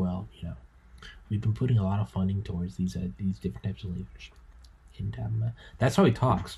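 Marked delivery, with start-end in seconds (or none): 0.0-4.3 mock soft-spoken asmr-style librarian voice, quieter, faster. Describing a soft-spoken man, the speaker imitates his ASMR-like librarian way of talking. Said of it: "talks almost like an ASMR like librarian".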